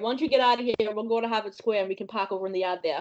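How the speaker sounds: strong local Boston accent. Closing the episode with a farewell in Bostonian slang, Boston accent. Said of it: "in her best Boston accent".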